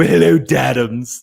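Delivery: loud, rough, posh cartoon baby voice. Addressing the other speaker by a nickname, the speaker uses Stewie voice. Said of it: "I have to call you this in Stewie's voice".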